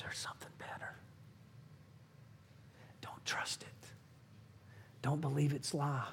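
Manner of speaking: very soft, barely voiced hushed whisper. Speaker describes reaching for Vanity Fair's wares, voicing the Holy Spirit in a whisper. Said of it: "the Holy Spirit whispers".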